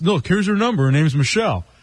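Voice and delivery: ordinary talk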